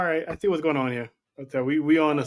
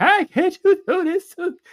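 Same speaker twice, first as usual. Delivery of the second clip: voice cracking way up, very high, crackling. Retelling how Faith sounded on Friday: imitating Faith's crackling voice. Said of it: "that same crackle in her voice".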